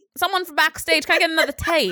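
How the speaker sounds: really bad, loud, put-on Australian accent. Acting out a woman calling backstage halfway through her show, in a really bad australian accent. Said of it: "That's a really bad accent".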